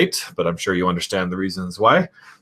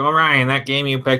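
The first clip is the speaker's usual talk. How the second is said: high-pitched put-on nerdy know-it-all voice; 5 semitones higher than usual. Imagining a viewer's comment about a game pick, doing a nerd voice. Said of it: "That's my nerd voice right there".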